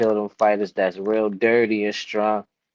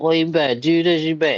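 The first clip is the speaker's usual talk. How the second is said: put-on high, bossy, demanding father voice yelling; 7 semitones higher than usual. Describing family pressure, acting out the father's words, imitating a yelling father. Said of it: "multiple people is yelling at you like that".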